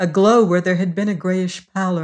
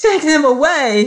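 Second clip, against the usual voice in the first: wild, hysterical scream, shrill and loud; 8 semitones higher, 5 dB louder than usual. Reading a story, a woman interrupts a sales pitch: screaming hysterically. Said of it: "Screamed Emma McChesney hysterically".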